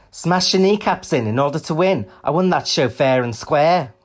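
mock Liverpool accent. Quote an angry drag queen's Twitter response, in an attempted Scouse accent. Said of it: "I'll try and do a Scouse accent".

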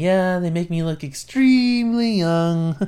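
playful, jokey tone. Describing him between takes, the speaker quotes his remark, retelling a joking remark. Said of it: "he was just like jokingly saying".

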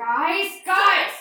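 very loud, very high-pitched yell. Calling to the rest of the crew to come in: shouting. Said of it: "Ray, why are you shouting?".

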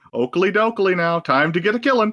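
mild, polite, only mildly cross. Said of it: "Ned Flanders level mad".

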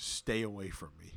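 ordinary talk

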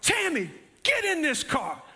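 mock urgent, commanding call, high-pitched. Retelling being boxed in by strangers at a car: retelling a yell. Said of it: "and I yelled".

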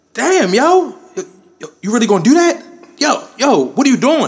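very high, brash, loud shouted yell. Retelling how he reacted to a man staring from a doorway, retelling his own loud yelling. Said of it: "and I'm loud, just like this".

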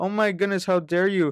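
put-on exaggerated offense. Retelling a scene where a woman is told to step back: imitating exaggerated offense. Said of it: "you could exaggerates and be like".

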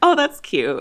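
ordinary delivery

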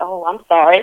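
ordinary talk, nothing marked

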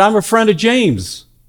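loud shout. Telling a story of someone shouting from a porch, retelling a shout. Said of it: "he shouted".

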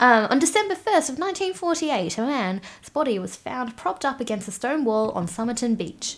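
put-on old-fashioned fifties Australian radio news announcer voice. Asked to tell about the Somerton Man, narrating in a 1950s ABC newsreader voice. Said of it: "That was my Australian newsreader voice".

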